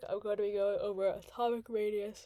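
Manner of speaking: talking through a yawn. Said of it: "Sorry, I'm yawning".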